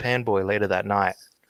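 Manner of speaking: ordinary talk, nothing marked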